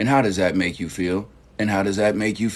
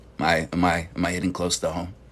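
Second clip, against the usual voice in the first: normal talking voice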